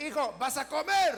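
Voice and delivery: loud, slow, drawn-out calling voice.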